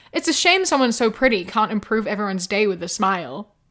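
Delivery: ordinary delivery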